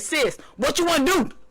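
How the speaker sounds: rough, roughened-up put-on voice. Retelling how her brother answers when she asks him for something: imitating his rough voice. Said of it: "With this rough ass motherfucking voice".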